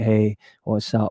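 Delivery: dull, lifeless, flat, droning monotone. Showing how flat their greetings have become: mock monotone. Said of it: "I'm just, like, monotonous, like".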